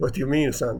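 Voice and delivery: acted-out sarcastic tone. Retelling a story, speaker voices a father answering his bragging son sarcastically. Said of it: "Father goes sarcastically".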